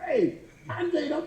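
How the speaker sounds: mock yelling, pitched high.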